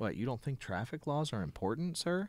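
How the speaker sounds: light, fast, swooping sarcastic tone. Retelling their reply to a man complaining about stop signs: sarcastic tone. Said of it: "kind of in a sarcastic tone".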